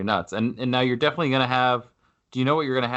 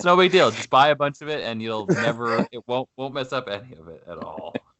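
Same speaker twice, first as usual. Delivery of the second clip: ordinary talk, nothing marked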